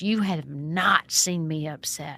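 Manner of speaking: very slow, drawn-out, aggressive tone. Retelling a house rule dispute, imitating an angry, shaking woman. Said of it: "she stood over me, and she pointed her finger in my face, and she was shaking".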